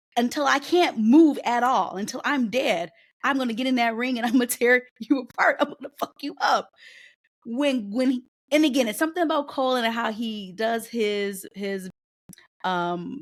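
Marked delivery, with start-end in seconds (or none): 0.1-6.7 mock fired-up, loud, passionate delivery. Retelling a sit-down promo with Cole, imitating Goldberg's passionate promo. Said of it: "the passion in his voice".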